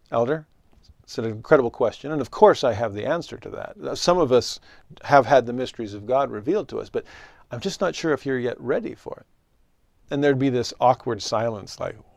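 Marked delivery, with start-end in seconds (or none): none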